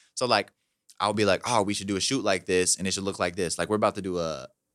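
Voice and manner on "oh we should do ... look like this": plain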